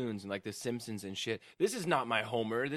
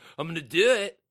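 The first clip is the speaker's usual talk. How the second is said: mock drunken slurring, higher pitched and louder; 5 semitones higher, 10 dB louder than usual. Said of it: "he's all drunk at my house".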